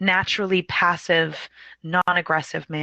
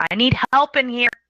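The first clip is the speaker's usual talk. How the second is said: loud, high-pitched shouted yell; 7 semitones higher, 5 dB louder than usual. Retelling how she opened the door and called out: retelling a yell for help. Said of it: "she opens the door and yells".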